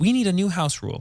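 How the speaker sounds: usual speaking voice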